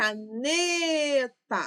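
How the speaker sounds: caneta, stressed ne drawn out long. Lesson on the stressed syllable, ne in caneta drawn out. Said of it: "O ne eu falei por mais tempo".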